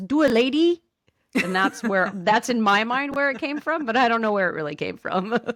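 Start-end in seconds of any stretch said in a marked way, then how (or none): 0.0-0.8 put-on high old lady voice with broken accent. Explaining where a phrase came from, quoting an imagined little old lady in her broken accent. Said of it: "in her broken accent says".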